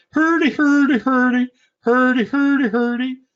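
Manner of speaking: very high, Swedish-style nonsense gibberish babble. The speaker says they sound like the Swedish Chef, then does it: Swedish Chef gibberish. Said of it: "I sound like the Swedish chef".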